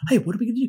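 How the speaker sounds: very high, squeaky, yappy small dog voice. Comparing a movie neighbor to a cartoon, imitating a yappy little dog. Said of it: "really yappy and just going".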